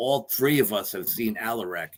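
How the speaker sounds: ordinary delivery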